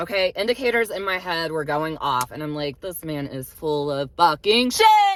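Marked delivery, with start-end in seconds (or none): 2.8-5.2 riled-up outburst, loud and slow. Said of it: "I'm getting a bit riled up here".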